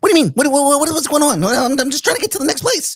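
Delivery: very high, squeaky, overly anxious, over-caffeinated squirrel voice. Recalling the squirrel he played on a web show, put-on over-caffeinated squirrel voice. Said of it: "my most over caffeinated character".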